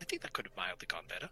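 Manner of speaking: whispered under the breath. After shutting the door, he mutters to himself: whispering under his breath. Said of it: "kind of whispers under his breath".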